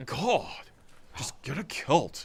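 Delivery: clumsy character voice, high, very slow, drawn out. Speaker slips into a bit mid-chat, Napoleon Dynamite impression. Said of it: "that was not a very good Napoleon Dynamite".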